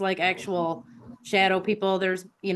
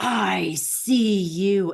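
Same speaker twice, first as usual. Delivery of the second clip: menacing, very scary demonic voice; 4 dB louder than usual. Retelling hearing a voice in the dark bathroom at night: imitating the scariest demonic voice. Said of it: "the scariest demonic voice go".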